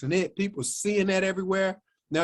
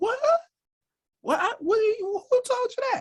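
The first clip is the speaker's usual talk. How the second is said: very high, animated, swooping mama voice. Acting out a phone call, doing mama's reply: imitating mama's voice. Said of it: "That's my mama's voice".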